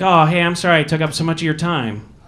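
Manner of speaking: ordinary talk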